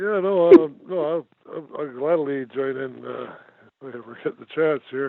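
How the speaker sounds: mumbled, indistinct, words blurred together. A speaker replies to the others in the conversation, mumbling. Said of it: "You're mumbling".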